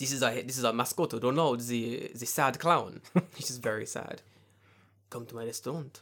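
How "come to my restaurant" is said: put-on French accent, quieter and faster. Joking about a McDonald's restaurant bit, in a put-on French accent. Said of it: "Why is that French now?".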